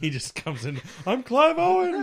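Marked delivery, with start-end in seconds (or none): 1.1-2.0 loud, very high, shrill, scared cry. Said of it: "the dad scaredy voice".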